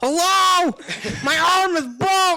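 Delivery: shrill, very high, loud, drawn-out scream. Retelling how Barry kept calling out to busy staff: imitating someone screaming. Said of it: "He's screaming, "Hello?"".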